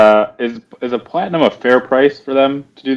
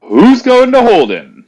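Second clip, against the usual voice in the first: shrill, booming, very high full-throated shout; 13 semitones higher, 4 dB louder than usual. Ignoring the words they were told to yell, calling out to everyone: booming yell. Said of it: "I'm gonna yell".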